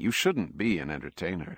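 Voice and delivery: ordinary delivery, nothing marked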